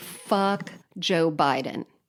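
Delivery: ordinary talk, nothing marked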